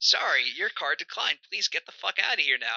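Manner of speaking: rude robotic voice. Acting out a robot working in customer service: playing a rude customer-service robot. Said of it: "just a robot working in customer service".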